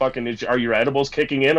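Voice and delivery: ordinary talk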